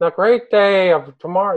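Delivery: high, reedy voice, drawn out. Imitating how Aleister Crowley sounded on a recording: high reedy Aleister Crowley voice. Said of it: "that's the way it sounded".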